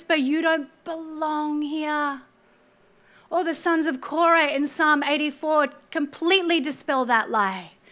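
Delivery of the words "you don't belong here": sly, crafty, devilish half-whisper. Acting out the devil half-whispering a lie to someone: half-whispering as the devil. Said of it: "he'll whisper".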